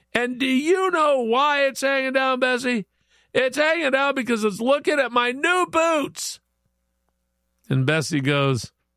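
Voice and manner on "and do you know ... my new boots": mock furious angry shouting, pitched high. Telling a joke, the speaker voices a man shouting back at a woman: furious yell. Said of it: "Sam's furious and he yells".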